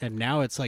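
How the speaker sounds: normal talking voice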